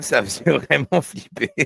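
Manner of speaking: ordinary talk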